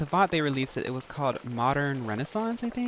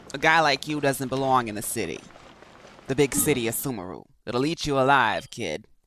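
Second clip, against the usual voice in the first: put-on Jersey accent; 4 dB louder than usual. Imitating the accent of the speaker just heard: Jersey accent. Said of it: "Is that a Joyzy accent?".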